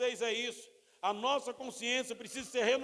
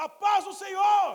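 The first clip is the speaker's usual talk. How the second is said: very loud, high, full-throated shout; 8 semitones higher, 9 dB louder than usual. Recalling how a man greeted people at the church door, imitating someone shouting. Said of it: "gritando e falando".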